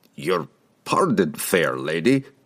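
croaky dwarf voice cracking on syllables. Narrating a dwarf addressing a lady, croaking, voice cracking on every syllable. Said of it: "the dwarf croaked, his voice cracking on every syllable".

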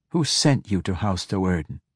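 ordinary delivery

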